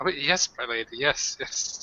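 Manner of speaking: nervous, hurried, jittery eager-to-please delivery. Voicing the character Flip replying to a lady in a role-play scene, nervous Flip. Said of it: "Flip looks nervously and he's like".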